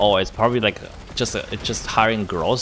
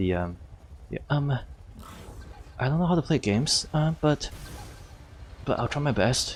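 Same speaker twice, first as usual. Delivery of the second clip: put-on bashful, timid, soft shy boy voice; 4 semitones higher, 8 dB quieter than usual. Trying out a shy role in a game, timid shy voice. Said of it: "that's not shy enough".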